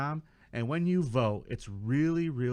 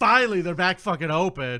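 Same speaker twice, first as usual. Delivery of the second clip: acted angry voice, higher and louder; 5 semitones higher, 8 dB louder than usual. Imagining being a customer at the reopened store: imitating an angry customer. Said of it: "I'd be in there like".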